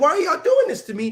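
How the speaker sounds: play-acted sobbing in a very high voice. Speaker acts out a man police dragged from his car, imitating a man crying. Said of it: "he's crying".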